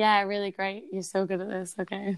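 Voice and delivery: deadpan, flat, zero enthusiasm. Speaker shows how they'd sound as a motivational speaker: flat, unenthused. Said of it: "I always sound so unenthused. I'm like".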